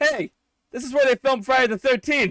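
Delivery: loud, very high announcer-style proclamation. Retelling the father's words to the whole group: imitating a declaration to everyone. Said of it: "he declares to everyone".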